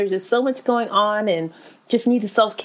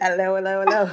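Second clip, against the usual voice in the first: put-on British accent; 2 semitones lower than usual. Talking about always wanting to be British, the speaker does a fake British accent. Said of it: "Why do I always want to be a British person?".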